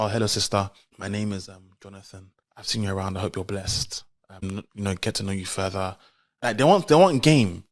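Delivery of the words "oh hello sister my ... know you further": polite, courteous, hesitant voice. Acting out how a guy without game greets a woman: imitating a polite churchgoing suitor. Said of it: "imagine a guy saying".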